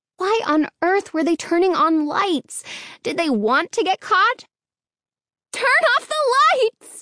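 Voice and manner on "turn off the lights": very high, shrill, frightened crying voice. Narrating a woman repeating her shouted order, high, shrill, frightened voice. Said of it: "she repeated in a high, shrill, frightened voice".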